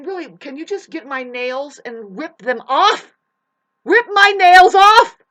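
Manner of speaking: very high, very loud, shrill upset outburst. Complaining that someone pruned them bald, emotional outburst. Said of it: "Sorry that I'm getting so emotional about it".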